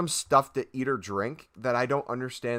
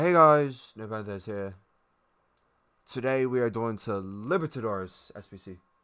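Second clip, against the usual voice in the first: tired, worn-out, fed-up delivery. Imitating another YouTuber's channel intro: imitating a tired YouTuber greeting. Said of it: "It just sounds more and more tired the older he gets".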